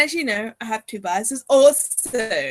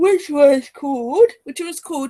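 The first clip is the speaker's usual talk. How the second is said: speaking through a yawn; 4 semitones higher, 4 dB louder than usual. Tired speaker trying to recall a comeback's name, yawning. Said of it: "I'm yawning because I'm starting to get tired".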